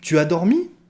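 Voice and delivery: rising pitch at the end on dormi. French lesson on asking questions with the affirmative form; rising intonation on dormi. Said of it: "On monte la phrase".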